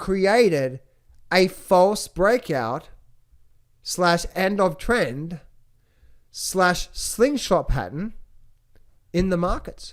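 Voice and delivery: deliberately slow, halting, spaced-out, broken phrasing. Explaining a gold market pattern to the audience, speaking slowly. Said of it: "I'm going to speak slow now".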